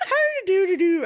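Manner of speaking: sounds like a leprechaun. Imitating how another player just sounded, like a leprechaun. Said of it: "You sounded like".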